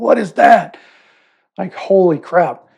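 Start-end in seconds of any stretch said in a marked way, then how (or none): 0.0-0.8 half-hearted, mild roar, pitched up. Retelling what he said on seeing the damage to the speaker's head, retelling a roaring yell. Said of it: "like some kind of roaring voice".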